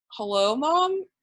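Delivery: put-on deadpan, dead serious, matter-of-fact tone. Retelling how Ayanna answered her phone mid-game: straight-faced imitating Ayanna. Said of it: "completely, like, straight-faced".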